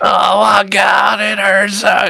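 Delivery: raw, high, rough agonised scream. Voicing a wounded prisoner being interrogated: screaming in pain. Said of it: "and he's screaming".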